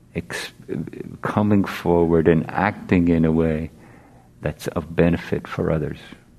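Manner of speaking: normal talking voice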